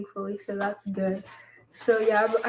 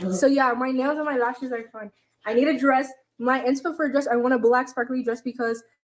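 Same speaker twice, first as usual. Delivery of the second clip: words tumbling out fast, rushed, rattled off; 2 semitones higher than usual. Tell the person with you about getting ready for homecoming, talking so fast. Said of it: "why are you talking so fast?".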